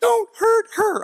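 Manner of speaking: very high, swooping, squeaky voice, shooting up. Retelling warning a dude off a girl, voice jumping way up high. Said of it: "My voice went up ten octaves".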